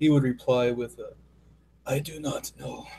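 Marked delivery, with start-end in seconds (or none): 1.9-2.9 dry, raspy, soft voice. Narrating a turn, voicing the Wanderer's reply in his dry raspy voice. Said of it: "He has a very dry, raspy voice".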